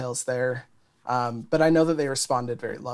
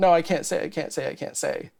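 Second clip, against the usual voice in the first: put-on crying and pleading, much slower; 5 semitones higher than usual. Recounting a hard conversation from the past, retelling crying, pleading. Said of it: "it was a lot of crying".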